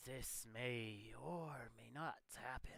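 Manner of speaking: soft, otherworldly, ethereal tone. Narrator voices the silhouettes the others are looking at, in an ethereal voice. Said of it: "in a ethereal voice say".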